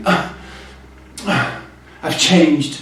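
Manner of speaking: self-admiring, conceited tone, full of airs. Showing how not to act when arriving there: mock vain tone. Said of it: "Don't be vain".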